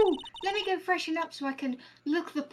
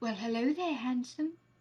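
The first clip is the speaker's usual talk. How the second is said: put-on flirty character voice, lower pitch; 3 semitones lower, 4 dB quieter than usual. Voicing a game witness who greets the lawyer: flirty Ace Attorney witness voice. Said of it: "I'm not gonna continue to do that fucking voice".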